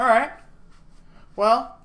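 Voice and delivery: high, loud, chuckling police chief character voice. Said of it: "Simon just chuckles at that one and goes".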